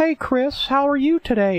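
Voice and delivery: put-on very high-pitched old man voice. Describing a cartoon episode, the old man greeting Chris, in Herbert voice. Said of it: "he talks like this".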